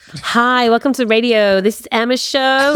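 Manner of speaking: slow, measured, deliberate put-on American accent. Recreating an old taped radio show intro in an American accent. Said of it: "I used to do it in an American accent".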